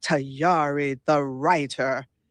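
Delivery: big, deep, commanding announcing voice. Retelling saying hello to her, quote her reply in her big voice. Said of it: "she said in her big voice".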